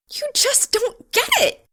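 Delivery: shrill, exasperated, very high frustrated shriek. Reading a story, the narrator voices her cutting him off, shrieking in frustration. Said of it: "shrieking her frustration".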